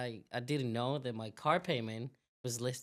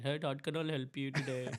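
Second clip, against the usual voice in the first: put-on Indian accent. Imitating a call center agent answering a bank call: put-on Indian accent. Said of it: "it's an Indian".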